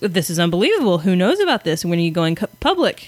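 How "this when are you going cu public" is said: ordinary talk, nothing marked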